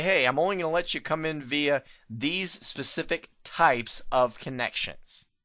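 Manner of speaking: ordinary delivery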